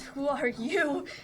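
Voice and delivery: words pushed out through teeth with clenched jaw. Facing someone who pulls out an assault rifle, she asks through her teeth. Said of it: "through her teeth".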